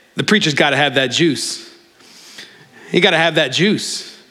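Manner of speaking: put-on very broad New York accent and delivery. Retelling what a church friend used to say: imitating a New York way of talking. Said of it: "in his very New York sort of way".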